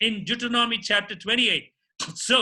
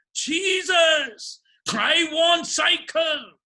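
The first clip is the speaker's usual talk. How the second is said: high-pitched voice crying out upward; 5 semitones higher than usual. Retelling a boy who kept praying for a cycle: praying loudly. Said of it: "he started praying so loudly".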